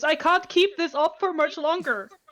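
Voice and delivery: loud shouting. Speaking in character during a fight at sea: shouting. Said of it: "is gonna shout".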